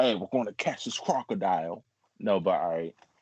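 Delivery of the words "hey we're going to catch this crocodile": clumsy, bad put-on Australian accent. Doing a quick impression after the Steve Irwin mention: bad Steve Irwin impression.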